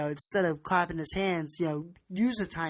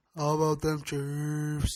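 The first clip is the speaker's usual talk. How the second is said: teasing, mocking, boastful put-on delivery, in character. Reacting to the Chiefs becoming favorites: mocking Andy Reid impression. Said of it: "how, uh, Andy Reid would say it".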